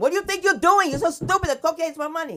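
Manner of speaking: very high, shrill, loud scolding voice. Acting out a mother scolding her teenager: imitating a Dominican mother. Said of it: "a Dominican mother will stomp them".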